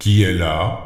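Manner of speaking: big, deep, gruff storybook wolf voice. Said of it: "qui entendit la grosse voix du loup".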